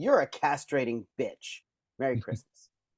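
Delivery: acted, contemptuous, withering, disdainful delivery. Retelling what the mother said to a patient at christmas dinner: imitating a disdainful mother. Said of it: "she looks at her with disdain".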